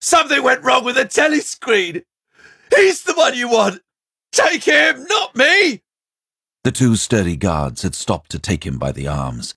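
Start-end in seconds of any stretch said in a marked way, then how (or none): 0.0-5.8 very high, loud, screeching shriek. Narrator reads a man in a cell as a guard steps forward, shrieking. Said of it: "The man's voice rose to a shriek".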